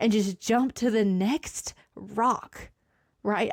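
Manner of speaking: slow delivery with emotion rising in voice. Speaker telling listeners about a personal decision, getting emotional. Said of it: "I'm getting emotional".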